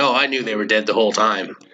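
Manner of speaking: play-acted, smug, self-satisfied know-it-all tone. Retelling media rounds after the sub deaths: smug James Cameron impression. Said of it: "James Cameron doing his media rounds smugly saying".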